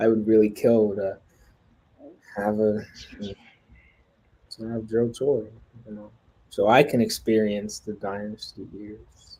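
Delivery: sad, dejected voice. Speaking to another person, letting depression show in the voice. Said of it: "You hear the depression in my voice".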